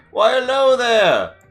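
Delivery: excited robot barber voice. Voicing a barber who calls from the doorway: Mister Snippy calling out excitedly. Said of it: "you hear him call from the doorway".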